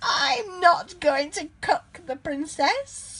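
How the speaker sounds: high, squeaky, squealing witch voice. Reading a story aloud, the narrator gives the witch's reply to the knight, squealing. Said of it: "squealed the witch".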